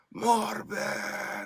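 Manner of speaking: high, soft mock scream in a Russian accent. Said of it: "he screams in a Russian accent".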